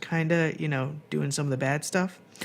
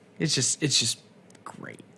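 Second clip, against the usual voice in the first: ordinary delivery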